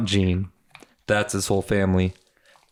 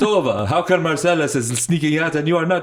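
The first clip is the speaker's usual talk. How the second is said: put-on Caribbean islander accent, pitched up; 7 semitones higher than usual. Retelling what they said to someone, in a put-on Caribbean islander accent. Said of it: "was doing that accent".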